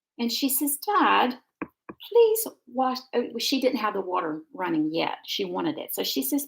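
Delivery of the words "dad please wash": put-on plummy, proper posh English little-girl voice. Retelling a little girl in the bathtub asking her dad to run the water, imitating a posh little girl. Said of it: "started talking like the little posh girls do".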